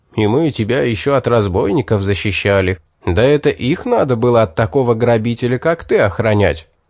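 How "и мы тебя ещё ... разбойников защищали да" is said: usual speaking voice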